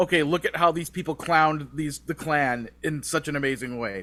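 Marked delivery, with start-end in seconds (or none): none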